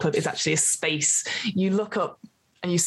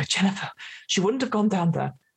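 panting, out-of-breath voice. Voicing Laurie calling for Jennifer by a dark pit: panting while talking. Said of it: "Laurie's panted breaths and every so often go".

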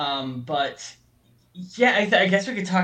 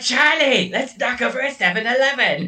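put-on crazy female cartoon voice, higher and louder; 7 semitones higher, 5 dB louder than usual. Comparing a film voice to a cartoon: Jason Steele crazy female character voice. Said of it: "the voice that that guy, Jason Steele, does whenever he does, like, a crazy female character".

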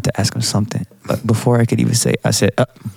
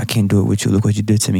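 ordinary talk, nothing marked

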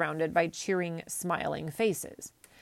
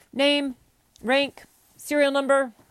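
very loud, high, barking voice; 7 semitones higher, 7 dB louder than usual. Reading a story where the clerk asks forms questions: very loud voice. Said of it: "ask a whole lot of questions in a very loud voice".

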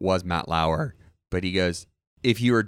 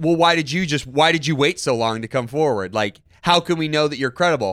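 raised, hard, defensive voice, pitched up; 6 semitones higher, 5 dB louder than usual. Retelling an interviewer's questions to a woman: imitating Matt Lauer getting defensive. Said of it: "He was kinda getting defensive".

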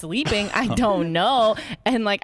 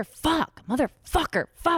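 acted-out furious outburst, high and angry; 7 semitones higher than usual. Retelling a partner cursing over lost keys: imitating angry cursing. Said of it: "he gets very angry very fast".

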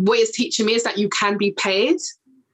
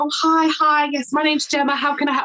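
fake high, polite customer-service telephone voice; 6 semitones higher than usual. Speaker acts out how she answers calls to earn a check, put-on telephone voice. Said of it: "having that telephone voice".

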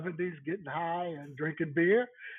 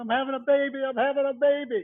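mock screaming, loud and high-pitched; 8 semitones higher, 6 dB louder than usual. Retelling a caller on the emergency line: imitating a woman screaming. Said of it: "the woman started screaming".

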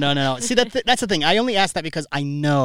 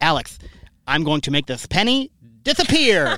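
put-on heavy childlike lisp. Retelling what a boy said when they were five, imitating a big lisp. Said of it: "he had this big lisp".

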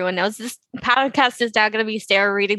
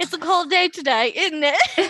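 poor put-on English accent, pitched high; 8 semitones higher than usual. Acting out the line Nick always uses for England: imitating Nick's bad English accent. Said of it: "His favorite one to say for England".

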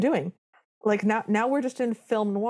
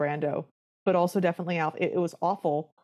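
ordinary talk

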